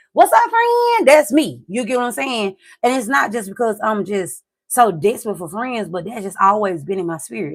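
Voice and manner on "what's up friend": bright, loud, very high-pitched bubbly voice. Showing how they greet people at a party: imitating own bubbly greeting. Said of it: "but I'm also very bubbly".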